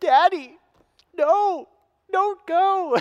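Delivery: tearful wail, very high and slow, drawn out. Retelling a five-year-old daughter begging not to ride: imitating Taylor crying. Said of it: "she starts crying".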